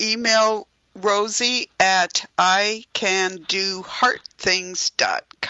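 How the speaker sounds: very slow, drawn-out speech. Giving listeners an email address to write down, speaking really slowly. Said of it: "I'm saying it really slow".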